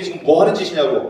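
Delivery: normal talking voice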